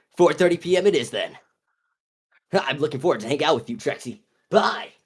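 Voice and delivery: clumsy acted nerd voice. Voicing a comic character agreeing to meet at four thirty: horrible Miguel voice. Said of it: "my horrible Miguel voice".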